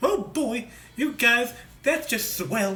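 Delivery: halfway-decent squeaky, high cartoon mouse voice. Showing others the impression you sometimes can do, in a halfway decent Mickey Mouse voice. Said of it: "I can do a halfway decent uh, Mickey".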